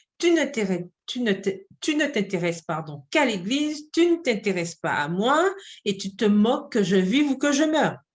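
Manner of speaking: ordinary delivery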